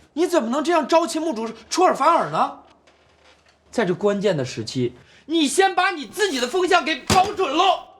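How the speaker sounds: reproachful, shrill shouting, pitched very high. Confronting a comrade who went back on the plan they had agreed, yelling. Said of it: "你跟我嚷啥？".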